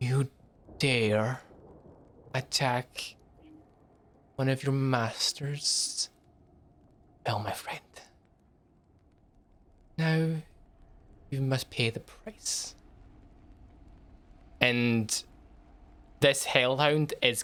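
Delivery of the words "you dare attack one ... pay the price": hushed, quiet, deliberate and slow delivery. Narrating a game, voicing a hellhound confronting its attacker, in a quiet voice. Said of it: "in a quiet voice".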